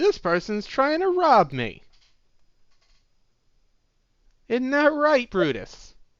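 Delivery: very loud, shrill, swooping, high thug shout. Narrating a thug stepping out of an alleyway, speaking very loudly. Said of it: "it says very loudly".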